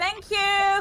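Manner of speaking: shrill, very high-pitched shouted call. Calling back in character to someone walking away: yelling back. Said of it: "I'm just gonna yell back".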